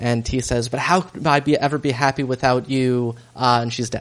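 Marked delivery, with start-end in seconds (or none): none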